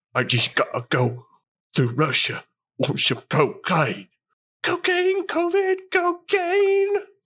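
starts Australian accent, slides into Cockney accent. Doing an accent bit that drifts from Australian into Michael Caine. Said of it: "like an Australian into a Michael Caine".

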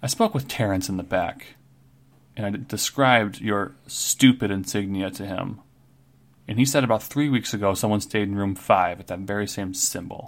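plain

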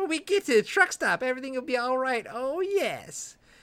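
mocking, taunting voice, very high pitch. Reading the story aloud, the narrator gives Connie's line, mocking. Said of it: "Connie says mockingly".

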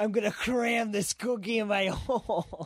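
very high, shrill, mock screamed outburst. Retelling a line shouted while leaving the stage: imitating Ryan screaming. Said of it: "Ryan screams".

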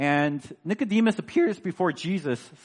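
voice cracking and breaking on the words. Teaching about a passage while the voice keeps cracking. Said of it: "my voice is cracking a little bit today".

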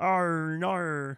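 high, bad put-on Canadian accent on "no". Imitating how the other speaker says "oh no": mock Canadian accent. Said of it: "That's how you sound".

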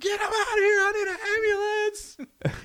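screeching, very high, loud screaming. Retelling a 911 call with a lady screaming nearby: imitating a woman screaming. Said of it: "she's just screaming in the background".

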